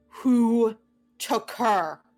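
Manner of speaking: yelling in a character voice. Playing a character bursting into a room: yelling in character. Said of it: "she just yells".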